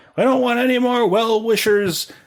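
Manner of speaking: yelling. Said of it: "He yells out".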